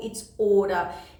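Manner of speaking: normal talking voice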